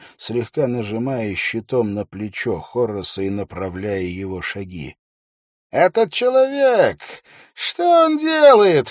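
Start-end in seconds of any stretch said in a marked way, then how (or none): 5.7-8.9 very loud, high-pitched call. Narrator voicing Tennyson above the arena noise, a loud voice over the crowd. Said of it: "раздался над ареной голос Теннисона, перекрывая шум".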